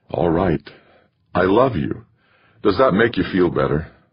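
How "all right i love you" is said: ordinary delivery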